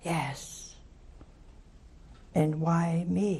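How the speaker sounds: very slow, gentle sighed-out delivery. Retelling what a very gentle voice answered the speaker, retelling a sighing reply. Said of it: "And he said with a sigh".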